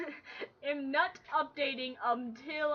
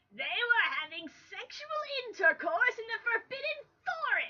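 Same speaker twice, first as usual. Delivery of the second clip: furious yelling, rising high in pitch; 9 semitones higher than usual. Narrator reads a character's accusation against two others: furious yell. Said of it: "he yelled in a furious voice".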